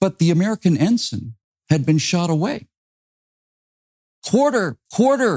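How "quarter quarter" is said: high, loud, pleading shout. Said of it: "they shouted across the blood-slicked deck".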